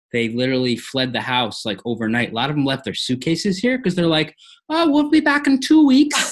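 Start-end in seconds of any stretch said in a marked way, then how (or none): 4.7-6.3 put-on vague, muddled, blended European accent, very high. Retelling what departing house guests said: put-on blended European accent. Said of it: "Which accent are you doing right now? Irish?".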